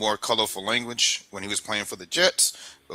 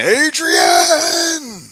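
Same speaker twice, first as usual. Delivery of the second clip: very high, very loud, belted calling out; 11 dB louder than usual. Showing how the name should be said, in Rocky's voice. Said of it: "in Rocky's voice".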